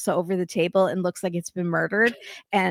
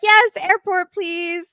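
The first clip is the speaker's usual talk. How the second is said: very high, delighted and cheery voice; 12 semitones higher, 5 dB louder than usual. Retelling how Julia spoke to the driver while leaving, imitating Julia sounding happy. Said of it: "She sounds so happy".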